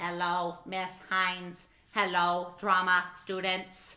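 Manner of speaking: pitched low, kept even. Voicing the robot Candy Robo greeting the drama students: Candy Robo robot voice. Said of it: "Her name is Candy Robo".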